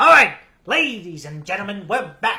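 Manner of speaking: booming sports announcer voice, very loud. Speaker welcomes the audience back, in a sports network announcer voice. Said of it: "I sound like an announcer from some sort of a sports network".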